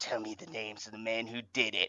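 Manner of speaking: rough, gruff, barely audible voice. Quoting a character's line to others, in a gruff voice. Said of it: "He's got that like gruff where he's like".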